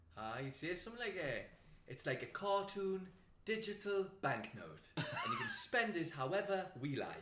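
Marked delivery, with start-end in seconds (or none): 1.9-7.3 fake-cheery, fake-enthusiastic kids' tv presenter voice, pitched up. Imitating a politician who sounds like a kids' tv presenter: imitating a kids' tv presenter. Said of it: "sounds like what a kids T V presenter sounds like".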